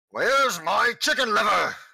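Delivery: very loud, high-pitched, blurted out. Voicing a player character's line to the group, in a very loud voice. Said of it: "says in a very loud voice".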